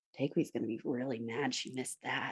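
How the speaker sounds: very quiet, hushed murmur under the breath. Player voicing Anna as she watches it all happen, Anna murmuring under her breath. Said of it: "she just murmurs under her breath".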